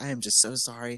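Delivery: soft, polite customer service voice. Retelling an apology made to someone, in a customer service voice. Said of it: "in my customer service voice".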